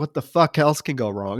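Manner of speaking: mock, imitated exasperated woman's voice. Retelling a scene where her cab drives away: imitating an exasperated woman. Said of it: "she's exasperated".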